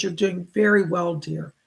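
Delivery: plain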